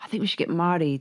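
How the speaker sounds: normal talking voice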